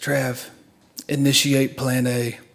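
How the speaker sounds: weakening voice. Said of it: "his voice is already starting to go".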